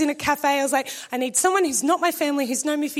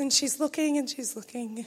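usual speaking voice

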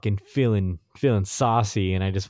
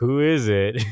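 really doubtful, dubious, questioning tone; 2 semitones higher than usual. Speaker retells asking who a woman found for them, in a mock-questionable tone. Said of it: "In a really questionable tone".

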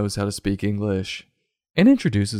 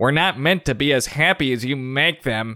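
put-on mean, high-pitched, sneering old hag voice; 5 semitones higher than usual. Narrator quotes One-Eyed Rosie, a mean old hag, as One-Eyed Rosie sneering. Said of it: "she sneered".

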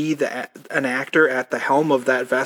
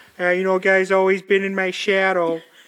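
put-on Midwest accent, pitched up; 5 semitones higher than usual. Quoting a movie line after describing the actor's accent: Steve Zahn Midwest accent. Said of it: "sort of Chicago, sort of Midwest accent".

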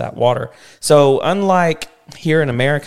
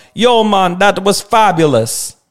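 put-on Jamaican accent, loud, high and drawn out; 6 semitones higher, 5 dB louder than usual. Showing the other speaker how it would sound, in a Jamaican accent. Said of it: "if I would have said it in a Jamaican accent".

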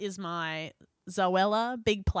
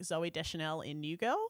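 ordinary talk, nothing marked

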